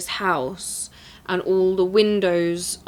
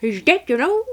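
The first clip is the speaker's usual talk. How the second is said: put-on old lady voice, much higher; 8 semitones higher than usual. Repeating the old lady's line, doing an old lady impression. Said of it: "that's a spot on impression".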